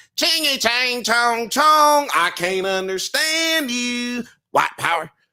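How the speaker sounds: very high-pitched, put-on character voice. Answering a request for an impression: Dave Chappelle impression doing a character. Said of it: "Dave Chappelle impersonation of him doing characters".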